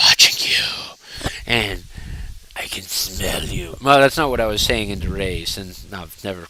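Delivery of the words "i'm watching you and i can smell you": fake creepy heavy-breathing panting voice, lower and quieter. Acting out a creepy caller on the phone: put-on panting creepy phone caller. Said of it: "panting like some kind of pervert on the side of the phone".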